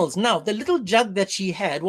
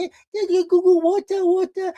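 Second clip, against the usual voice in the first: put-on high toddler babble with half-words; 10 semitones higher, 4 dB louder than usual. Retelling a story, voicing a small girl offering to water camels: small child's baby talk. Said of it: "she was still a child".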